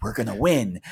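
imitated whisper. Retelling what a stranger in the group said, arm around the speaker: imitating a whisper. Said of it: "and whispers".

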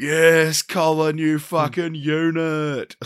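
high cheering scream with "unit" drawn out. Retelling the cheer when Colin was announced, re-enacting their own scream. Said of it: "I screamed like".

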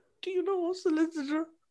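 weepy, tearful, very high-pitched sobbing voice. Retelling a friend's call after a drink-driving arrest, imitating a friend crying. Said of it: "he's on the phone crying".

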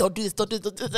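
put-on whispering. Retelling how a man at a festival begged, imitating someone whispering. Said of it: "and he whispering".

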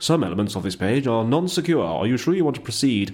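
very proper, posh British broadcaster voice. Quoting an annoying browser security warning message: BBC voice. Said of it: "In a very BBC voice like that".

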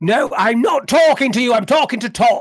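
loud, high-pitched yelling at full voice. A character rehearsing a scene brushes someone off, shouting. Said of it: "realise you're shouting".

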